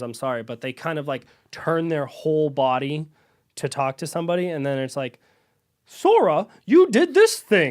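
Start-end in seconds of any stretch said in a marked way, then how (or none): 5.9-7.7 put-on very high, very loud, stilted old game dub. Mocking old video game dialogue where characters turn to speak, PS2-era game voice acting. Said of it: "feels like voice acting from a PlayStation two era".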